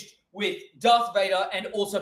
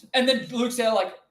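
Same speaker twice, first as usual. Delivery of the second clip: ordinary delivery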